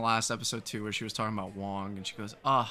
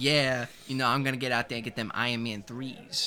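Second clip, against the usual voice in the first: put-on slangy, casual-sounding voice. Discussing an episode, mimicking how a lawyer character now talks, slangy. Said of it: "now he's talking like a".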